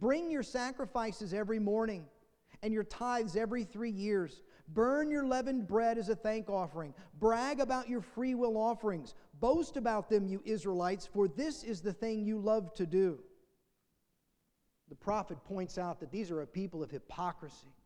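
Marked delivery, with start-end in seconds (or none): none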